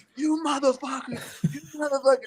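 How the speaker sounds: mock enraged shouting, very high-pitched. Retelling a prank victim yelling from the truck: imitating a friend yelling. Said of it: "I could hear him yelling".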